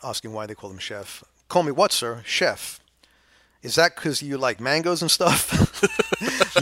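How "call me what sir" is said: put-on best-effort American accent, loud and high. Playing the chef answering a questioner, in an attempted american accent. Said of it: "in the best american that i can".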